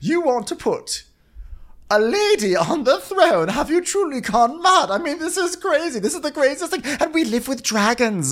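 words fighting off laughter, laugh held back. Answering another character in a scene, holding back a laugh. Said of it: "I'm trying not to laugh when I say this".

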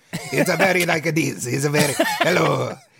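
magical frog voice with Italian accent. Showing how to do a producer impression: De Laurentiis as a magical Italian frog. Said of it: "make him sound like a magical Italian frog".

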